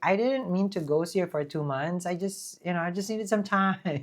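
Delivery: plain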